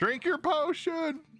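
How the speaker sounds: acted, in-character yelling. Playing a character running up late, yelling behind: yelling in character. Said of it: "yelling behind".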